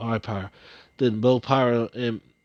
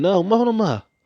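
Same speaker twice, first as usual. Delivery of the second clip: acted high screaming cry of dismay; 9 semitones higher, 4 dB louder than usual. Telling a dragon story, voicing a character's cry as Monoma freezes: screaming. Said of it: "you were screaming".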